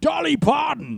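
very high, raspy, hoarse, booming yell. Recalling a comedy sketch's impression, yelling a name: yelling Sean Connery impression. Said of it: "The guy from S N L doing the Sean Connery impression, just yelling".

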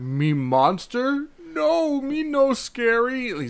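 very high, very slow, simple, broken speech. Describing a scene, quoting how the monster talks: Frankenstein's monster voice. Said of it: "He talks like that".

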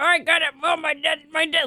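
high put-on old-person voice with sore dentures. Acting out an old person whose dentures make it hurt to talk: put-on old person voice with dentures. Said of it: "this is like an old person".

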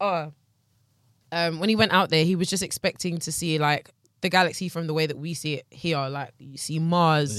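plain

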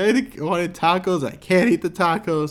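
high, sobbing, crying, disappointed voice. Retelling what she said while drunk and crying: imitating drunk crying. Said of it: "And she was, like, crying".

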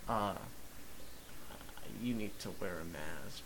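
very soft, timid, nervous, shy voice. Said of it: "like, so quiet".

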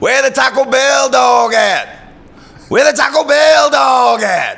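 very high, shrill, loud shouting. Retelling how a moviegoer yelled during the film: imitating someone yelling. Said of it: "this guy starts yelling out".

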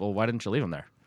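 dry, expressionless, flat deadpan delivery, acted. Retelling a receptionist's answer to a man's story: retelling a deadpan reply. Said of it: "she just deadpan, staring straight at him".

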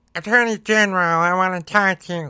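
high, whiny, grating complaining voice. Imitating Ted Cruz addressing the Attorney General: whiny Ted Cruz voice. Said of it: "That's how he fucking sounds in my head".

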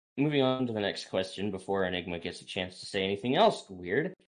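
normal talking voice

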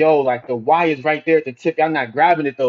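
usual speaking voice

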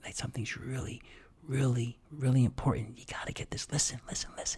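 voice brought right down into a hushed whisper. Speaker demonstrates drawing an audience in; lowered voice. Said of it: "As you bring your voice down".

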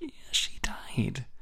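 slow, soft, hushed whisper.

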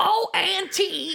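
very high, creaky, raspy cartoon mom voice. Showing the other speaker what their impression would be, Marge Simpson impression. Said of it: "like a Marge impression".

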